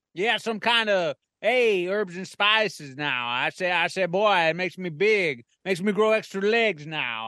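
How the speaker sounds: cartoon rooster character voice. Answering why he is so huge: Foghorn Leghorn voice. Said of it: "it's me, Foghorn Leghorn".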